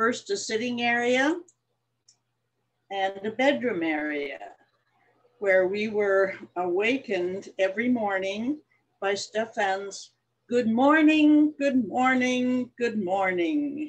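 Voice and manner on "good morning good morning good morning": put-on Norwegian-accented speech. Retelling the morning wake-up greeting on the ship, Stefan's Norwegian accent. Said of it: "with his Norwegian accent".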